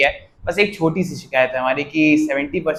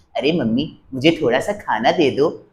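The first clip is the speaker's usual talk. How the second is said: put-on animated cartoon character voice. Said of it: "Shinchan की आवाज़ निकालूँ। ... मैं ऐसे बोल भी देता था".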